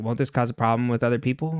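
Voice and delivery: plain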